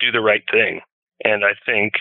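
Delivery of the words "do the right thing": ordinary talk, nothing marked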